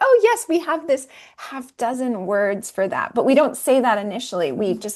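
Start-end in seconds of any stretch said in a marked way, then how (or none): none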